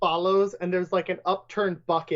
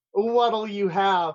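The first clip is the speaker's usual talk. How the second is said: fake suave smooth-talker tone that falls flat; 2 semitones higher than usual. Voicing a character walking up to the counter: failed attempt at a suave tone. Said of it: "trying to be really, like, suave, but utterly failing".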